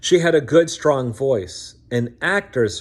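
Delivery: plain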